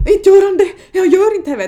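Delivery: acted-out panic. Speaker retells a man panicking as a baby is coming in the car, acting out real panic. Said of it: "riktigt så här panik".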